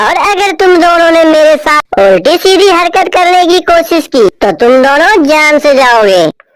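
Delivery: very loud, arrogant, bullying, threatening shout. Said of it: "[name] को घर से जाते ही [name] कौवी बोलती है, / [name] को घर से जाते ही [name] कौवी बोलती है, / माँ, आज से ये तेरी बहू है".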